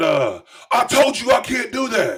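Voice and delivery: put-on very high-pitched, shrill yelling. Retelling a man's reply when he started yelling at the speaker, imitating someone yelling. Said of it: "he started yelling at me".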